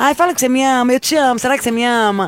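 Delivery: mocking, put-on pleading, begging voice. Mocking someone who begs a man for crumbs of affection, imitating the begging. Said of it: "implorando pro cara uma migalha".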